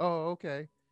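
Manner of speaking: put-on indifferent tone. Retelling a phone call reporting a car wreck: imitating an indifferent reply. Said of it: "she couldn't have cared less".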